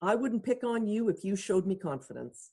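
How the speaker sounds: plain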